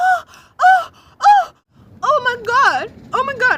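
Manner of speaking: put-on very loud, very high, poorly done Nigerian accent. Retelling how the group home staff reacted to the busted sink, attempted nigerian accent. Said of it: "I'm trying to like rep- replicate the the Nigerian accent".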